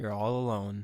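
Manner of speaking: deep dropped voice. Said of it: "it's the voice of your consciousness".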